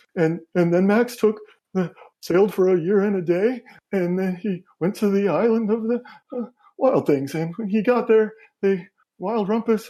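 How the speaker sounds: tearful read-aloud voice broken by sobbing. A game master voices a mother in a kid's room, reading through sobs. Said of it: "she's kind of trying to read through her sobs".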